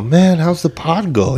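put-on drunk man voice, pitched very high. Recounting how a drunk man came up to the speaker: imitating a drunk man. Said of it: "He's all drunk".

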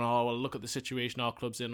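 ordinary talk

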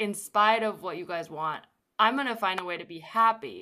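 ordinary talk

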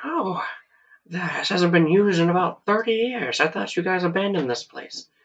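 put-on old-timer character voice. Voicing an old man who walks up to the group, old man voice. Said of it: "like an old man kind of with like a trucker hat".

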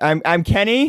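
overly loud voice. After being told to speak up, speaker introduces himself too loud. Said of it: "Bring it down a couple of notches".

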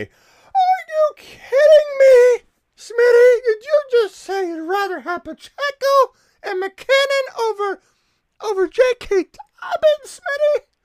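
very high, very loud, shrill, drawn-out squeal. Imagining Scott's reaction to Smitty's pick, the speaker does Scott's voice going way up. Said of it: "I could hear his voice go up 8 octaves".

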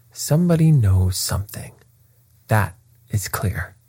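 ordinary delivery

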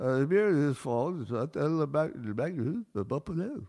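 jumbled, tangled politician-style speech. Quoting an explanation given to a crowd: Joe Biden impression. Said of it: "my impression of Joe Biden".

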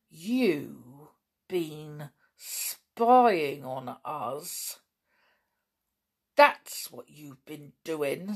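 icy, cold, hard-edged voice, slow delivery. Lou accuses the boy Dan has seized of spying: cold, hard voice. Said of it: "said Lou in a cold, hard voice".

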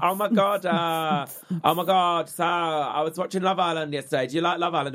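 very high, gushing, excitable radio DJ chatter. Imitating a radio presenter chatting about a TV show: excitable Capital radio presenter. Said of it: "It's all like that".

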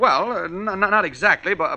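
stammering. Questioned about how the recordings were sent out, a man answers, stuttering. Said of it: "Clark, what are you stuttering about?".

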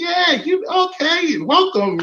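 mock, very high, honeyed, sugary sweet-talking voice. Retelling a man talking to a woman, imitating his sweet-talking. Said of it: "he's like sweet talking and saying".

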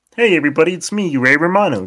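croaky frog voice, high and fast. Pretending to be Ray Romano for friends, a Ray Romano impression like Kermit. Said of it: "you sound like Kermit the fucking Frog".

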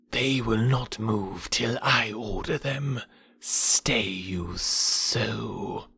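soft, very slow hiss. Narrating the jungle tale, the snake answers Bagheera: Kaa's hissing voice. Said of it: "Kaa hissed".

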